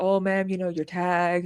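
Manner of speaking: put-on gentle voice. Recounting how the cops spoke during an encounter with her mom, imitating a gentle cop. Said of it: "the cops have been, like, you know, very gentle".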